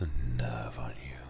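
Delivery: teasing, unvoiced ASMR whisper.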